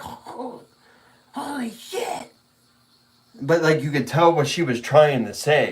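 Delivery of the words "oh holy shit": put-on whispered, breathy, hushed, thrilled little-girl voice. Retelling what a little girl said, the speaker is imitating an excited little girl. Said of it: "She was like super excited or something".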